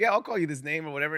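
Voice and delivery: ordinary talk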